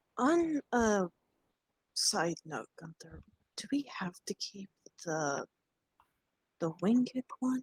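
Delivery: conspiratorial, hushed whisper. In character, asking Gunther privately so the fairy won't hear: whispering. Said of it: "she's whispering this, by the way".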